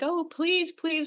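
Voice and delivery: high, pleading, begging voice.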